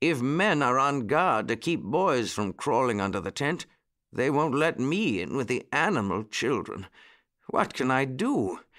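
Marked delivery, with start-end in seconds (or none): none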